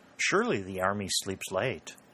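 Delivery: ordinary delivery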